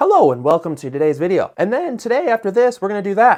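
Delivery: stilted ai-style voiceover with long pauses between words. Giving video editing tips, mimicking how AI voices sound: AI voice with long pauses. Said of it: "There's like these giant pauses in between sentences".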